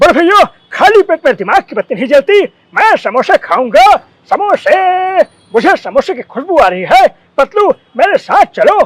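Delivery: loud, high, put-on cartoon character voice. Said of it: "मोटू कैसे बोलते हैं बताता हूँ".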